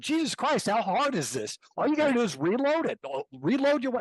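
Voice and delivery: mock, nonstop, very high-pitched yelling. Speaker replays yelling at the listener on the firing range, retelling a yell. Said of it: "I'm yelling at you the whole time".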